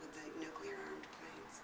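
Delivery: hushed, awestruck voice.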